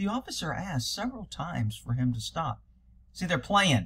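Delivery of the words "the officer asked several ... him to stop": soft, soothing, calm, reassuring woman's voice. Imitating the woman you listen to, in a nice calming woman's voice. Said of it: "it's a nice woman calming voice going".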